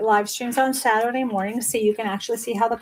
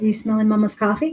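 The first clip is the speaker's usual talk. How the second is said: put-on dog character voice. Speaking for the dog as it sniffs the coffee: voicing the dog. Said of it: "He's just like".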